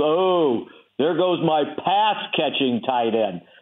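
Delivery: biting, dry, sarcastic remark. Recalling a minicamp, the speaker retells Bill Parcells' remark about a tight end, mock-sarcastic. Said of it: "in his sarcastic manner".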